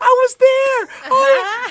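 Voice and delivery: high, loud, excited yell.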